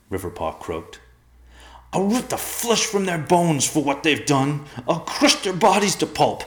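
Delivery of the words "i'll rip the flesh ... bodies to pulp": raging, very high, raised, furious outburst. Reading a character's line in a story, raging. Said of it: "burned off in the heat of his rage".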